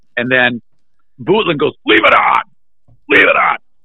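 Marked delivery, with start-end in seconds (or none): 1.9-3.6 mock furious, insistent, raised voice. Retelling what someone shouted when the radio was shut off, mock-angry shouted demand. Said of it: "And he was pissed".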